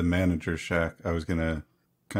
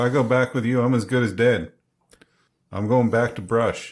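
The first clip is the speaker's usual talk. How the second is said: loud, high-pitched shout, yelling it out; 5 semitones higher, 5 dB louder than usual. Speaking as a character in a scene, shouting out. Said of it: "And I'll shout out".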